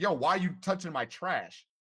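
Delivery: mock stone-serious, slow, dead serious, no joking. Retelling an anime scene, quoting a kid confronting Frollo: imitating a dead serious tone. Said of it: "And he's being dead serious".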